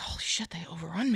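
very quiet, soft muttering under the breath. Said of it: "to himself".

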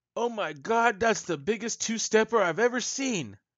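very loud, very high, shrill terrified scream. Storyteller voices a guy in the scene who is screaming out. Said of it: "You hear a guy scream out".

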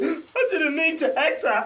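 high, crying voice, blubbering through tears. Riffing with others about someone who pulled up, imitating someone crying. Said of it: "crying like".

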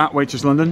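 ordinary talk

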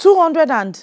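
shouting. Told how much money to bring for Mama's birthday, shouting. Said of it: "Why are you shouting?".

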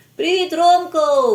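very loud, high, cheerful shout, as if calling far. Tymko runs to meet Romko and his grandfather, cheerful shout from afar. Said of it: "весело кричав він ще здаля".

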